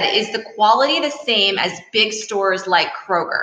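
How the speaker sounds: ordinary talk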